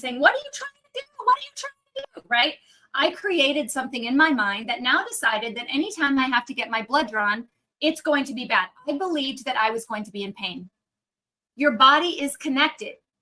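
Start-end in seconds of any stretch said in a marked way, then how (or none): 0.2-2.3 acted, shrill, very high child's scream. Retelling being held down as a kid for a blood draw: imitating a child screaming. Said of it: "and I'm screaming".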